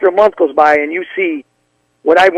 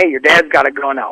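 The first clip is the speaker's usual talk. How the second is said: put-on panicked voice; 2 semitones lower than usual. Retelling a friend's phone call about a gun: imitating a panicked caller. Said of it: "calls me panicking".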